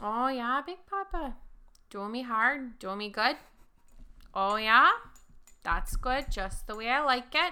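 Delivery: convincing, fully committed put-on Minnesota accent. Acting out a stripper's lines in a story, in a minnesota accent. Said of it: "You do that accent a little too well".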